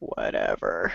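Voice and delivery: deep, quiet, scary voice.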